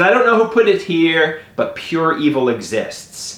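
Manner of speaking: ordinary talk, nothing marked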